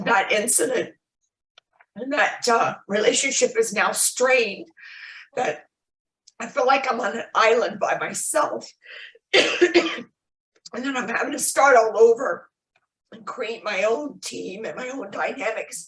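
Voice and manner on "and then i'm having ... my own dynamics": emotional voice catching in the throat. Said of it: "excuse me for getting emotional".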